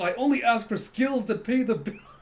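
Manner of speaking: high, loud, hammy delivery.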